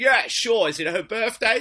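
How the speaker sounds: very loud announcer voice. Retelling answering a shout-out request, redoing own past self in a DJ voice. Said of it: "I probably had some DJ voice then".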